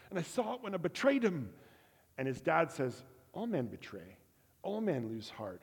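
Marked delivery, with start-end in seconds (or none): 0.1-1.5 put-on Scottish accent, pitched up. Retelling a character wrestling with his dad: attempted Scottish accent. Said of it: "It's my attempt at a Scottish accent".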